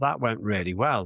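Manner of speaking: ordinary talk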